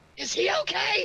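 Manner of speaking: loud, high stage whisper, loud enough to carry. Asking Turman whether Lord Dragon is okay, in a loud whisper. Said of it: "I whispered to Turman. Kind of loudly whispering".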